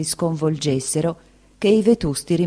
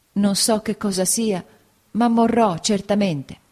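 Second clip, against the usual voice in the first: frightened stammer, much higher; 3 semitones higher than usual. A narrator reads the mother's words to signora Bezze, stammering in fear. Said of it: "balbettò mia madre".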